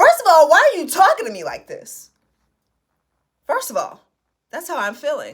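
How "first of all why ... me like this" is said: mock mad, heated, pitched up and swooping. Reacting while listening to someone talk, acting out an angry retort. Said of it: "I'm getting mad listening to him".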